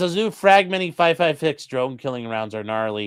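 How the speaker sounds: ordinary talk, nothing marked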